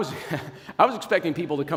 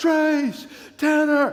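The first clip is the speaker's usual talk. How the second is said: mock, very high calling-out yell; 11 semitones higher, 4 dB louder than usual. Retelling being lost in a corn maze: retelling a yell. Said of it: "and I'm yelling".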